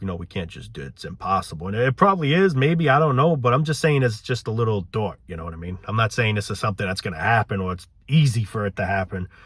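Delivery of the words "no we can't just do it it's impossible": low, soft, doubting naysayer voice. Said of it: "a lot of people be like".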